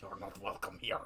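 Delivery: low, garbled bad Scottish accent drifting into Russian. Reviewing a movie, speaker mimics an actor's line: bad Scottish accent sounding Russian. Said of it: "he sounds like a Russian on the verge of swallowing his own tongue".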